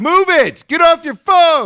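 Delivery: shrill, very high, full-volume angry shout. Retelling a traffic run-in, the speaker quotes the honking driver behind them, retelling a yell. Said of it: "And he's yelling".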